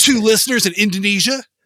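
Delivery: loud, pumped-up, pushy, aggressive, excited man's voice. Speaker imagines how data reports talk to her: excited, aggressive man voice. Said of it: "this excited, aggressive man voice".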